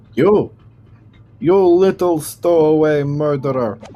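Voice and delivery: put-on Russian accent, loud and slow. Starting a character bit, the speaker addresses someone in a Russian accent. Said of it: "I'll do the Russian accent".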